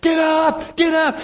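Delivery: very high, slow, drawn-out yell. Retelling how a man woke everyone out of bed, retelling a yell. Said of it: "he started yelling".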